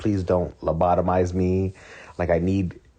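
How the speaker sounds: put-on begging, pleading voice. Retelling a show scene where a character begs: imitating someone begging.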